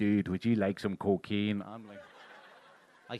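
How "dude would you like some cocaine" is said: loud put-on Northern Irish accent. Retelling being offered cocaine by a guy from Northern Ireland: imitating a Northern Irish accent. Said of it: "you just hear that accent going".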